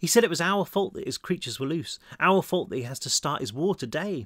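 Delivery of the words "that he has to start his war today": ordinary delivery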